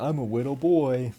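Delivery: put-on eight-year-old child voice, deep. Showing how they talked at eight: imitating own eight-year-old voice, deep. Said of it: "Deep voice like that".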